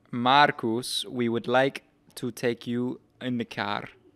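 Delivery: put-on French-sounding accent. Retelling being offered a ride back to the hotel, doing a Fernando Alonso accent impression. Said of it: "They sound more French than Spanish".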